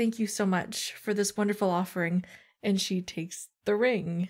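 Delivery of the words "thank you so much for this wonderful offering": quiet, soft, low-key voice. A character curtsies to the king and queen, quiet. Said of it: "says a quiet".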